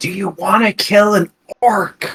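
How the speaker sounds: high, hushed half-whisper. In a game, a character half-whispers into a sleeping companion's ear: half-whispering. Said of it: "I'm gonna whisper into Kira".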